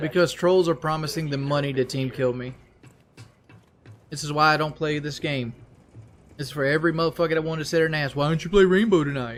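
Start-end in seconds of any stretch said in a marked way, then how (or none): 8.2-9.4 scornful, derisive, pestering mock voice. Mocking viewers who ask to play Rainbow: imitating viewers asking a question. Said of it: "Was that an impression of your viewers?".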